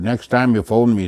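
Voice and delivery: ordinary talk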